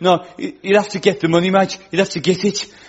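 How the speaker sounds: put-on Brummie accent, Birmingham speech. Showing off a birmingham accent in a two-voice skit, as the one refusing entry. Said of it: "I really need a Birmingham accent in my armory".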